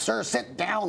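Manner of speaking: shouted.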